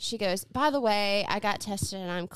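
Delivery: plain reading voice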